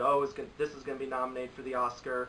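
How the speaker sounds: normal talking voice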